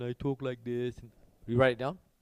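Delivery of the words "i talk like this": soft grumbling moan. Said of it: "I sit there and I grumble, I moan".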